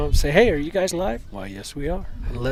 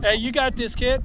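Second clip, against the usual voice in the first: high cheering yell; 9 semitones higher than usual. Cheering on a batter at the plate: yelling. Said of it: "why are you yelling at me".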